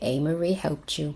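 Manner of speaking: ordinary talk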